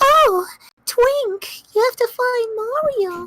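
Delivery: very high-pitched princess voice. Recalling playing Paper Mario earlier, the speaker repeats the line in a Princess Peach voice. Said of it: "I did a Peach voice".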